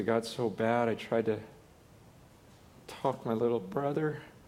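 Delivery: put-on choked-up, broken, tearful speech. Retelling how the student could barely finish his confession: imitating choked-up speech. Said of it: "he could hardly even speak".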